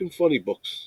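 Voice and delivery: grumbling, whispered, breathy mutter. Retelling how an annoyed man walked off: imitating a man muttering. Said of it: "he's like".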